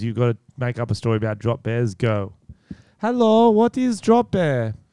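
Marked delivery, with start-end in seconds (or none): 3.0-4.7 put-on Swedish girl voice, high-pitched and slow. In a drama game with Tom, playing a Swedish girl. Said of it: "You're talking to Swedish girls".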